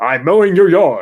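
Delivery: loud, robot-like announcer voice. Imagining a robotic lawn mower talking to the owner, in an Optimus Prime voice. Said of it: "Optimus Prime voice on there".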